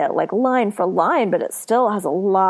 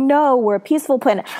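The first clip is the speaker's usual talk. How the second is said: put-on helpless, desperate, pleading, begging tone; 5 semitones higher than usual. Retelling the scene where the planet is threatened: imitating Leia pleading. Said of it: "Like, pleading".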